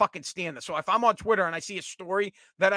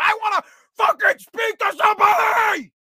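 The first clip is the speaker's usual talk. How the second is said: shrieking, very high, drawn-out scream; 14 semitones higher, 7 dB louder than usual. Retelling being on hold and yelling at an automated phone system: imitating screaming. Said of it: "I'm screaming at the automated system".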